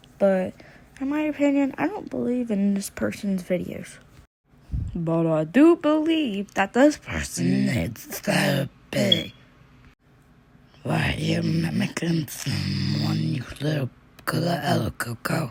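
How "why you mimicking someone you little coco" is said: low, put-on, possessed-sounding voice. Commenting on someone's videos, suddenly breaking into a put-on fake voice. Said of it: "that was just a fake voice I did".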